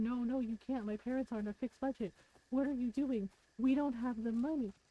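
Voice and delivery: high, frantic panicked voice. Retelling how Ron freaked out about money: imitating someone freaking out. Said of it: "Ron freaked out and said".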